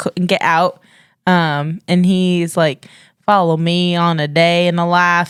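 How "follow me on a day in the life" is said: Texan accent impression. Retelling a video by a teenage Texan: imitating a Texan's accent. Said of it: "You have to say it in his accent".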